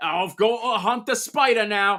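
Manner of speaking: sudden fake put-on British accent. Imagining what a man will say in his video, in a put-on British accent. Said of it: "British all of a sudden".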